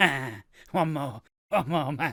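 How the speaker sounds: needy, desperate, craving pleading tone. Describing someone needing one more fix: imitating a shaking addict. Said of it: "like a shitting dog, just shaking".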